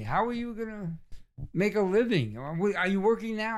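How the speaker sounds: mock harsh disapproving tone. Retelling how a girlfriend's father questioned him at dinner: imitating someone grilling harshly. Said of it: "he's, like, ripping into me".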